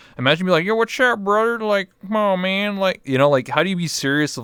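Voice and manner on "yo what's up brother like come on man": bro-ish hillbilly voice. Showing how comforting someone would sound in the old character voice: put-on hillbilly redneck accent. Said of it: "that type of voice".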